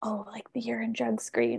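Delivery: mock whisper. Retelling how students bring up sensitive topics: imitating someone whispering. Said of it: "Why are you whispering?".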